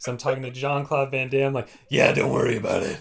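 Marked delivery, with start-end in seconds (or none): 1.9-3.0 loud, rough, rasping fake gruff superhero voice. Retelling talking to Jean-Claude Van Damme with a hoarse voice: fake Batman voice. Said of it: "Like I'm faking being Batman".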